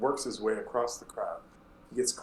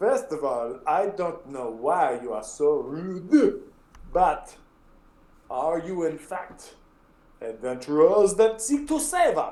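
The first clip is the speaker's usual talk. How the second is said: thick exaggerated French accent, higher; 5 semitones higher, 4 dB louder than usual. Voicing Clavius, a bard, greeting adventurers: ridiculously heavy French accent. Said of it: "that ridiculously heavy French accent".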